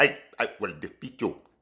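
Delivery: very hushed, low, cheesy kung fu movie dub voice. Mocking cheesy low-budget martial arts movies: cheesy martial arts movie voice. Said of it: "like that".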